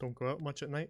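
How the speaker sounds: gruff, impatient delivery. Voicing a woman looking the group up and down: gruff, no patience voice. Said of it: "gruff, uh, no patience voice".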